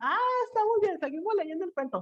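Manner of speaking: put-on high, soft child voice, sounding relieved.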